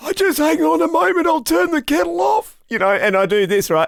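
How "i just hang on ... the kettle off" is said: put-on very high, elderly old man voice. Speaker shows how he copies his dad on the phone, imitating dad's old voice. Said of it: "my dad's got a really old voice".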